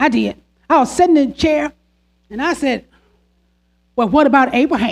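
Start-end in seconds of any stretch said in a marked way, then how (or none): 4.0-4.9 mock dry, sarcastic tone. Retelling a question asked while sitting in a chair: retelling a sarcastic question. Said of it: "That's how I did it".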